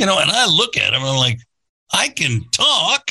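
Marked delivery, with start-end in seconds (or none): 1.9-3.1 mock condescending, exasperated, fed-up tone, pitched up. Retelling a reply to a man who spoke only to the buddy: imitating an exasperated you-idiot tone. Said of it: "in a tone like, "You idiot."".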